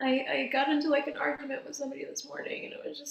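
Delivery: very high voice, crying through the words. Explaining why they get emotional, the speaker mentions a morning argument, crying while talking. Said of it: "I'm like crying".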